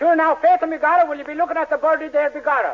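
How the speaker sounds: fake Italian accent, high, drifting into Irish. A man asked by a woman to use an Italian accent, attempting an Italian accent. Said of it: "say it with an Italian accent".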